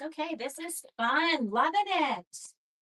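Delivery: sarcastic, insincere tone. Retelling driving home through very heavy rain: imitating own sarcastic remark. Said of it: "Being sarcastic, wasn't loving it at all".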